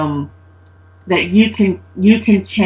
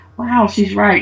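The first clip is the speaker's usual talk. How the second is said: ordinary talk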